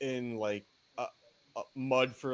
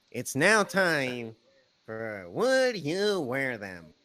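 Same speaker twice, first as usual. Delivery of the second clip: silly put-on comedy voice, loud, swooping; 7 dB louder than usual. Announcing a new show segment to a co-host in a funny put-on voice. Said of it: "I'd like to do it in a funny voice".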